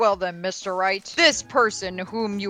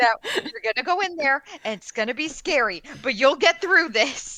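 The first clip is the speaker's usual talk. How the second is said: put-on encouraging tone, higher; 6 semitones higher than usual. Acting out preparing a witness with a pep talk: mock pep talk. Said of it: "Preparing a witness is just pep talks".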